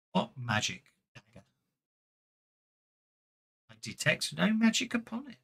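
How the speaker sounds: soft, half-whispered ghostly voice. Game master voicing a spirit answering a player, Zalara's spirit half-whispering. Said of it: "it's Zalara's spirit that whispers to you".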